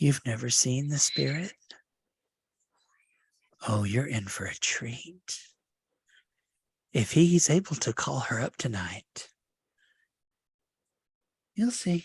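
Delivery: conspiratorial, secretive whisper. Voicing a character leaning over to a player: conspiratorial whisper. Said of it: "a conspirational whisper".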